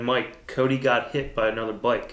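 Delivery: ordinary talk, nothing marked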